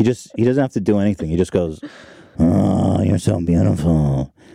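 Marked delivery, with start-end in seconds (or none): 2.4-4.3 very low, creaky, slow, drawn-out bass rumble. Imitating how he sweet-talks women: deep bassy Vin Diesel voice. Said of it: "so bassy".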